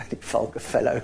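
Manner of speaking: low, creaky chuckling laughter.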